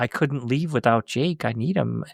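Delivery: very calm, eerie, creepy, unsettling delivery. Retelling a movie scene where a woman takes a baby: imitating a calm, creepy line. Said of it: "it very calmly and kinda creepily".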